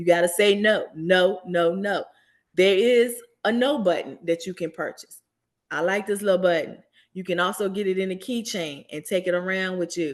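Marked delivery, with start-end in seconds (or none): 0.9-2.0 firm voice from the chest, much slower. Teaching listeners to practice refusing, a firm no from the chest. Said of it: "say it with your chest".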